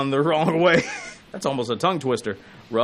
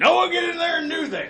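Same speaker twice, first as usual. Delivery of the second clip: put-on cartoon cowboy yelling voice, higher. Imitating how he talks to Noah off the air: Yosemite Sam voice. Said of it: "more like Yosemite Sam than it is Sergeant Carter".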